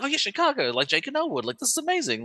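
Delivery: mock giddy child voice, pitched way up, sing-song. Recalling your childhood reaction on hearing the listener is from Chicago, imitating an excited child. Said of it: "in me got excited".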